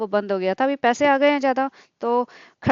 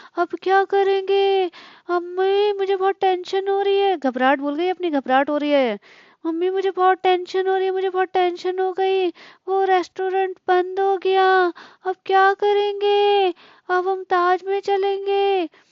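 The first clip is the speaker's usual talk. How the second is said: put-on high-pitched babyish voice; 8 semitones higher than usual. Talking to Mummy, in a baby voice. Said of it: "जब ये ऐसे baby voice करके निकालती है".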